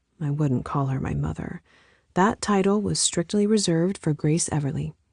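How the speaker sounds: ordinary delivery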